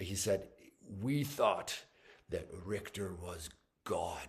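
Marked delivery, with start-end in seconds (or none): 1.0-4.3 put-on deep, grave Hungarian-accented English. Retelling Imre's answer to a question about a conductor, imitating Imre's Hungarian accent. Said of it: "great Hungarian accent".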